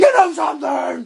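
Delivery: put-on angry wrestler shout. Showing what Foley shouts when angry: imitating Mick Foley's angry shout. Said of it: "the Foley shout".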